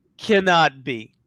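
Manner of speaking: normal talking voice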